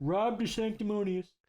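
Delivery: high, breathless voice with pursed lips and puffed words. Showing how to talk in a Trump impression: Donald Trump impression. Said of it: "And then you just talk like this".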